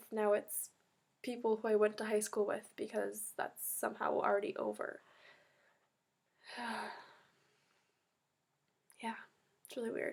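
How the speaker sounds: tearful speech while crying. Speaker recording a video, crying while talking. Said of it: "I'm literally crying on the internet".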